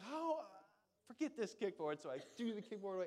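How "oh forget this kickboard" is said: annoyed, exasperated, fed-up outburst. Recalling a swim lesson where the teacher yelled at them, retelling getting mad. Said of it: "And I got mad at the kickboard".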